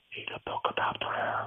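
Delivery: unvoiced whisper.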